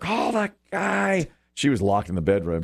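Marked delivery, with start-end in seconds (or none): 0.0-1.3 put-on very high, ragged, rough screaming. Retelling screaming at the speaker's wife during the bat chaos: retelling a scream. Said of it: "So I screamed at her".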